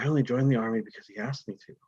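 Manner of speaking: muttering, mumbling to oneself. Voicing a soldier who keeps muttering to himself after the others leave. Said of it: "muttering to himself".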